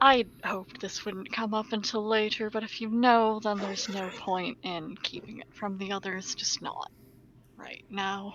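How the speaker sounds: very quiet. A character speaks privately so only one companion can hear, quiet. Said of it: "trying to be real quiet so only she can hear".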